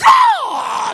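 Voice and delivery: preacher-style yell, "god" high and loud. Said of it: "that guy that yells out".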